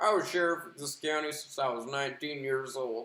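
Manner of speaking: voice like a film narrator. Quoting a movie's opening narration: Tommy Lee Jones impression. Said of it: "That's my Tommy Lee Jones impression".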